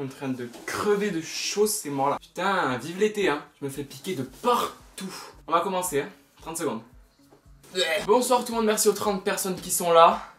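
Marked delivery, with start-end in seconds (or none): 8.0-10.2 winded, breathless, raised voice, puffing between words. Speaker greeting the thirty people present at the start, out of breath. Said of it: "Je suis essoufflé".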